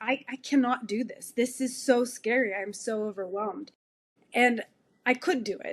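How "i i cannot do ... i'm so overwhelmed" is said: put-on crying, tearful voice. Retelling a call to a friend when first bringing horses home, retelling own past crying. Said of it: "on the call and crying and saying".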